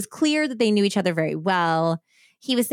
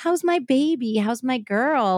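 put-on, slow, sweet, loving, doting tone; 4 semitones higher than usual. Retelling how a man comes in to the angry woman, mock sweet, loving tone. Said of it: "Like being all sweet and loving towards her".

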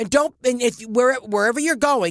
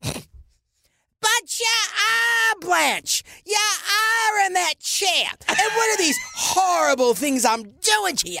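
very high-pitched, slow delivery; 9 semitones higher than usual. Acting out a Baby Jane scene on request, Bette Davis as Jane. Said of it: "talks up to Betty Davis".

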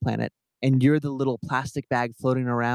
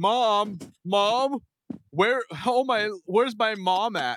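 mock woman's yell, much higher, slower; 9 semitones higher than usual. Teasing a friend about how they sounded, imitating a woman yelling for mom. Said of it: "That's literally what you sounded like".

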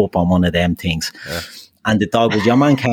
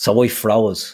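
normal talking voice

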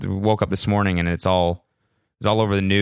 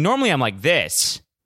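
loud, pitched-up, usual shouting voice; 7 semitones higher than usual. Speaking to listeners, showing how he normally sounds: loud yelling voice. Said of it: "that's why I yell".

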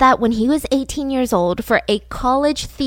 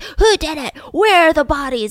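screaming, hounding, aggressive yelling; 4 semitones higher, 3 dB louder than usual. Describing an FBI agent in a docuseries hounding a suspect; imitating an agent screaming. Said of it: "And he's screaming".

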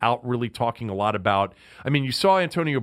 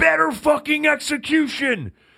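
put-on all-out scream, very high and raw; 14 semitones higher, 4 dB louder than usual. Retelling a coach screaming in a team meeting: imitating Gruden screaming. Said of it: "he's got that clenched jaw and he's screaming".

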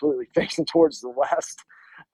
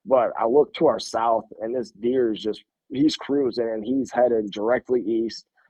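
usual speaking voice

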